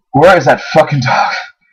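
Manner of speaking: plain reading voice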